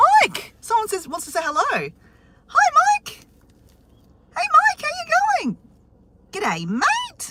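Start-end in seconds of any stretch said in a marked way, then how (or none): 2.5-7.3 very high, sing-song Australian elf voice. On the drive to the beach, the elf greets someone by name: Australian-accented elf voice. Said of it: "has an Australian accent too".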